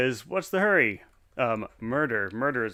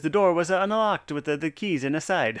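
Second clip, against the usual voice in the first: put-on heavy Italian accent; 4 semitones higher, 4 dB louder than usual. Reading out a police officer's lines in a game: heavy italian accent. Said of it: "In his heavy Italian accent".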